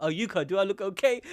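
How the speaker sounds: put-on bashful, timid, shy girl voice. Voicing a girl who is blushing over someone: imitating a shy girl. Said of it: "she got so shy".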